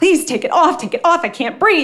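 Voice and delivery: very high, rushed, frantic, panicked screaming plea. Retelling begging to have an oxygen mask taken off: imitating own panicked begging. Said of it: "I'm screaming and I'm crying and I'm clawing at my face, begging them".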